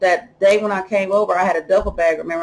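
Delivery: ordinary delivery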